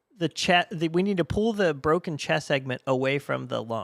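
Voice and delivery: ordinary delivery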